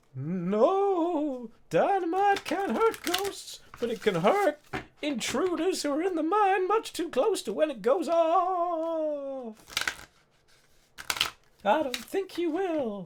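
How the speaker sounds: very high ghostly voice with no drawn out. Voicing a ghost warning intruders in the mine: ghost's voice. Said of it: "the voice says".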